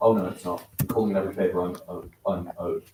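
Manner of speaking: ordinary talk, nothing marked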